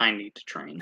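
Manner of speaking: low, barely audible murmur. Narrating a game scene, voicing Asher after his fight in a lower, just-audible voice. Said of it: "in a lower voice that um you y'all can just hear".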